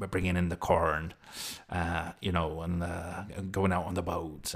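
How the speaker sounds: put-on rural West Country accent, almost pirate. Explaining an accent they tried to do, demonstrating a West Country burr. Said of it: "a West Country burr".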